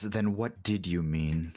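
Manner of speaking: very deep, oddly feminine voice. Voicing the being that questions a player, in a very deep, oddly feminine voice. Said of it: "very deep yet oddly feminine voice".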